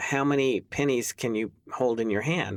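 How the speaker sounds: ordinary delivery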